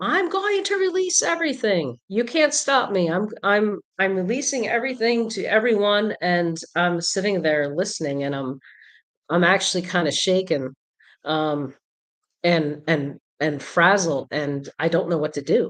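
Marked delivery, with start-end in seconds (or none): 0.0-6.2 defiant, yelled outburst. Recounting a man who stood up in court, retelling his yell. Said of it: "he stood up and he yelled".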